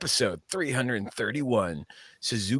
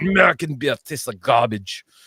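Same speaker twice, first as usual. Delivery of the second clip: loud, bad, terrible put-on Russian accent; 3 semitones higher, 6 dB louder than usual. Speaker recalls going to bars when younger, in a terrible fake Russian accent. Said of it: "terrible Russian accent".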